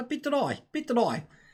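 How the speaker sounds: high, mock South African accent.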